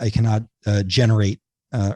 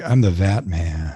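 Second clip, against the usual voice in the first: put-on stoner voice, much lower; 4 semitones lower than usual. Wondering aloud whether he has the stoner feel, in a stoner voice. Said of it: "does he have the kind of the stoner feel?".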